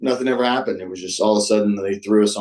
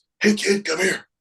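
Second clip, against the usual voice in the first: very high, piping, calling-out voice; 10 semitones higher than usual. Retelling how you were called over five minutes before doors, in the rescue man voice. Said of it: "the rescue man voice goes".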